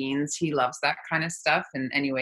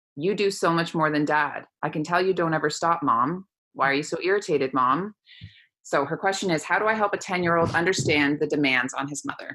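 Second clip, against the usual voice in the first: ordinary delivery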